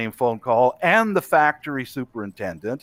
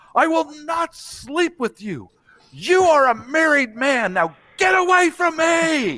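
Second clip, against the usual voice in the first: acted-out, very high screaming. Retelling how a girl turned on a man, the speaker re-enacts her scream. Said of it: "Screamed at him".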